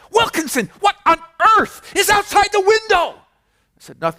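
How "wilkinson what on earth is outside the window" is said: piercing, sky-high, shrill yelling. Retelling a professor running down the aisle at a student: imitating someone yelling. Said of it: "he runs down the aisle and yells at me".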